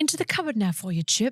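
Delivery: British accent attempt. A podcast host, asked to hear a british accent, repeats a line; british accent. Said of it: "let me hear your British accent right".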